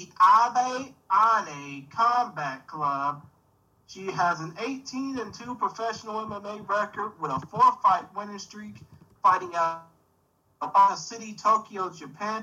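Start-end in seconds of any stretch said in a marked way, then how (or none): 0.0-3.2 drawn out, each word spaced, slow, raised voice. Introducing a fighter and naming her club, said slowly. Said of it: "I'm going to say this slow".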